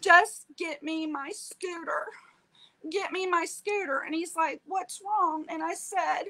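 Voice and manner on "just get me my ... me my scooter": sobbing, bawling, begging through tears. Recounting a phone call to her husband for help: retelling her own bawling. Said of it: "I was bawling".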